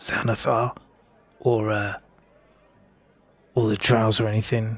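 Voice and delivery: voice dropped low. Voicing a character telling a rumor about the Harpers: lowered voice. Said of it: "he lowers his voice".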